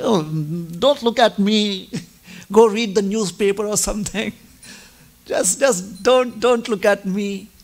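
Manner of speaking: shy, flustered, bashful, embarrassed tone. Retelling a story where a character feels embarrassed at being watched: acting out bashful embarrassment. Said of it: "she becomes a little embarrassed and she's bashful".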